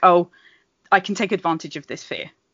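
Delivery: normal talking voice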